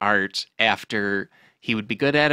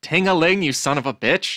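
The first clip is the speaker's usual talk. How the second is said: high yell of excruciating pain; 6 semitones higher, 3 dB louder than usual. Retelling a joke's punchline, man in excruciating pain: retelling a pained shout. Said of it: "the man in excruciating pain just shouts".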